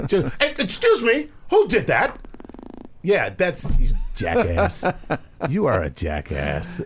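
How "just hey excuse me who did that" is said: very high-pitched second-grade teacher voice. Joking that time with his kids makes him talk like a second-grade teacher voice. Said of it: "I honestly sound like a second grade teacher".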